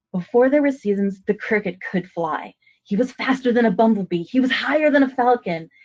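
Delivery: animated, expressive, lively, varied storytelling tone. Rereading a short story aloud for storytelling, with lively vocal inflection. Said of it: "using vocal inflection".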